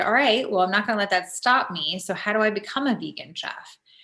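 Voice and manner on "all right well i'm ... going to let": plain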